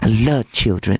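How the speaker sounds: slow, creepy, put-on childlike voice. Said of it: "something creepy about the way he was talking".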